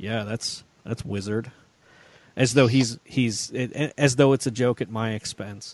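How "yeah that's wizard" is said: put-on mocking deadpan delivery. Quoting how a son mockingly says it: imitating a mocking deadpan. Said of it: "he'll deadpan that".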